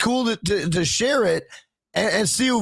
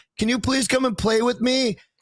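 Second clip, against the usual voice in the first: put-on small, childlike little-girl voice; 3 semitones higher than usual. Retelling a spirit box session at three in the morning, in a little girl voice. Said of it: "a little girl voice says".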